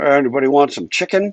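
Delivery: mock-indifferent, uncaring put-on professor voice. Doing a bit about professors who don't care, as an uncaring professor impersonation. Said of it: "That's my professor who doesn't care impersonation".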